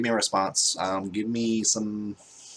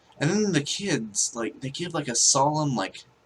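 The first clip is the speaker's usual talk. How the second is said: normal talking voice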